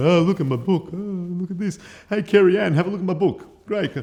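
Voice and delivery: very high, gushing, showy bragging. Mocking a showy way of presenting a book: mock showy book-bragging. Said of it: "Not me going".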